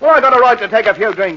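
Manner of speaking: high-pitched, loud, defiant shouting. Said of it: "Stop shouting, [name]".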